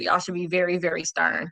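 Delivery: ordinary talk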